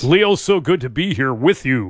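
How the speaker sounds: on-air radio broadcast host announcer voice. Asked to do the radio voice, the speaker greets leo in radio voice. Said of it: "On the radio voice".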